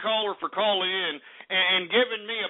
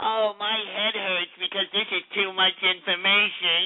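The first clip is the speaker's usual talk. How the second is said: mocking, dumbed-down, simple-minded idiot voice. Mocking people who stop learning, imitating a simplistic idiot. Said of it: "not be some simplistic idiot that's".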